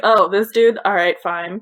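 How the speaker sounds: mock nonchalant, dismissive tone. Imitating a father hiring a famous tutor: imitating a dismissive shrug. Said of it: "like it was no big deal".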